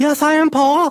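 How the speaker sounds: very high-pitched little puppet voice. A performer's ventriloquist puppet answers him during the routine, Tungy puppet voice. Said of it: "ventriloquism routine".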